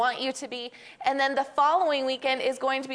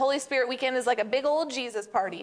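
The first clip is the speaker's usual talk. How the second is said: plain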